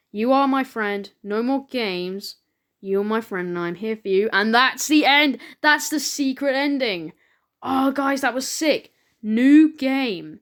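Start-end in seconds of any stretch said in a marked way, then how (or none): none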